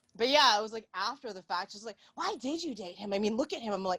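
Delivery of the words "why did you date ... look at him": disapproving, judgmental tone. Retelling what a friend said after a breakup: imitating a friend. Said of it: "That's a very good impression of her too".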